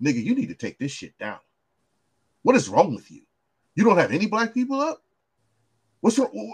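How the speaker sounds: animated delivery, pitch swooping all over. Retelling what Johnny Cochran told O J at his house, imitating Johnny Cochran. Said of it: "And Johnny Cochran said".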